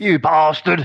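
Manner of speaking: put-on Australian accent. Talking about English voice actors in JRPGs, doing an Australian accent. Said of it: "like that. They sound like that".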